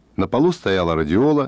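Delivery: ordinary delivery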